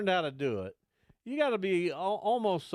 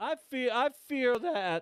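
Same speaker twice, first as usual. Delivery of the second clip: high, quivering, shaky voice wobbling on the edge; 6 semitones higher than usual. Admitting a fear to the other speaker; shaky voice. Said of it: "My voice is shaky".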